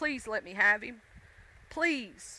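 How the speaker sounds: play-acted, earnest, imploring begging tone. Retelling how they begged the dog's owner: retelling own begging. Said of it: "I begged".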